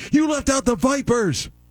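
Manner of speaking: high-pitched mock yell. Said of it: "the audience is yelling".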